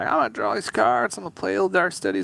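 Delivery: high, fast, creaky mocking player voice.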